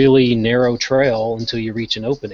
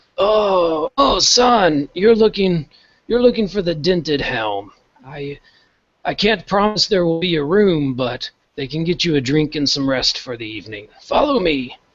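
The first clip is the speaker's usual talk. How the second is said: put-on high, startled, caught-off-guard old priest voice; 6 semitones higher than usual. Voicing a startled old priest who answers a traveller: old priest voice. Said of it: "this old priest ... he goes".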